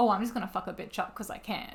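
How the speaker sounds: usual speaking voice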